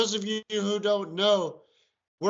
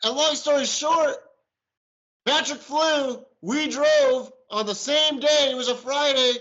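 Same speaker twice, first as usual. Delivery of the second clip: loud, high-pitched, carried-away yelling; 5 semitones higher, 5 dB louder than usual. Telling a long story to the audience, yelling. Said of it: "I'm sorry, I'm yelling".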